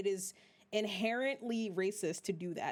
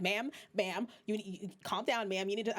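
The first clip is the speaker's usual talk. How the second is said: put-on curt, snapping tone. Retelling how ticket counter staff spoke to her: imitating someone snapping. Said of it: "snapping at me".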